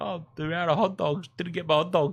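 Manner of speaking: put-on high voice, words broken up by crying. Telling an embarrassing story about a game, acting out her past self, retelling own crying. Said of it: "I'm crying like".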